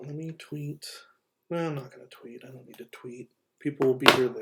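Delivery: easy, soft-spoken voice, quick. Talking to listeners and inviting their questions, in a nice soft voice. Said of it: "it's just my nice soft voice".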